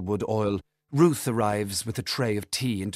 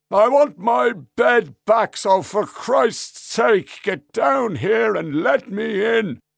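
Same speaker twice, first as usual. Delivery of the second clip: put-on very loud, very high drunken shouting; 12 semitones higher, 8 dB louder than usual. A man shouting from outside the house to someone inside. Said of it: "he says".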